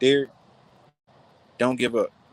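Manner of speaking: gentle, sweet-voiced encouragement. Speaker retells what a woman told him when he wanted to quit: imitating a sweet voice. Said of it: "Just in that sweet voice".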